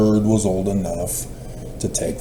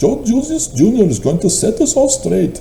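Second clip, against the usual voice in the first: put-on Indian accent, pitched very high; 12 semitones higher, 3 dB louder than usual. Speaker says a line, then asks if the accent was right, imitated indian accent. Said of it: "Did I do my Indian impression accent correctly?".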